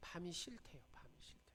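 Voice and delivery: soft, hushed whisper.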